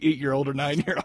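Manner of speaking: ordinary talk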